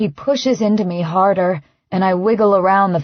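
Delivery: ordinary delivery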